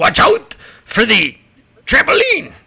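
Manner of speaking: put-on yelling, French-Canadian accent. Retelling how the boss yelled down, in his French-Canadian accent. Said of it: "in his French-Canadian accent".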